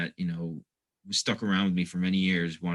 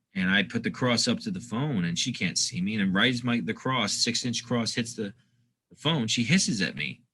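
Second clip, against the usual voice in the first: usual speaking voice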